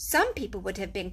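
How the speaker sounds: ordinary delivery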